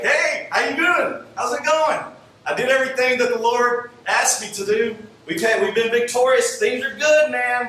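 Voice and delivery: put-on chirpy, breezy, very high and loud cheerful voice. Retelling how Saul comes out to greet a frustrated man: imitating Saul's cheerful greeting. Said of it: "he's greeting and cheerful".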